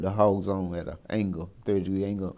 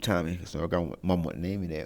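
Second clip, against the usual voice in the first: normal talking voice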